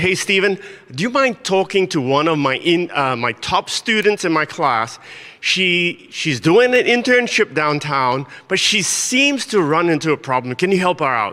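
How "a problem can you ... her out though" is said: ordinary talk, nothing marked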